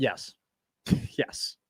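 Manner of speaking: breathy, scornful, disdainful near-whisper. Answering whether the coach seems to have been there seven years: disdainful. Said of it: "You say that with disdain".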